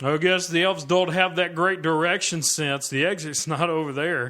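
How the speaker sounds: put-on loud, slightly drunk, tipsy heckling blurt. Narrating a scene, voicing the guest more drunk than the others, drunk heckler voice. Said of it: "the guy who's obviously a little more drunk".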